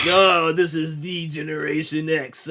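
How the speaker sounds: forced, very slow delivery, each word pushed out. Showing how his voice changed with the new persona, as Hunter Hearst Helmsley forcing bass into his voice. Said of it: "trying to put some bass in his voice".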